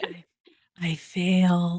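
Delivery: whispered. Imitating how the other speaker just answered: imitating a whisper. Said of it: "I love how you whispered it too".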